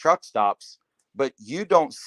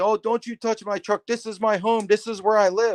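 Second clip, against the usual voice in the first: play-acted furious, high, pissed-off yell; 9 semitones higher than usual. Retelling how a truck driver came out of his sleeper: imitating someone yelling. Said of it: "yelling at me".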